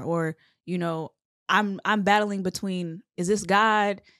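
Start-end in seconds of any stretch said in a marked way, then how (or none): none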